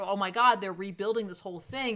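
ordinary talk

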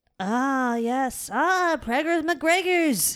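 jokey, high-pitched put-on Irish accent. Joking about a new nickname, in a fake Irish accent. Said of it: "one of the best accents I've ever done".

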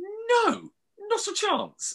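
very high, strained, high-pitched voice.

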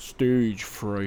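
very deep, soft, put-on radio announcer voice. Announcing the next film to discuss, the speaker puts on a radio voice. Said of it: "I put on my radio voice".

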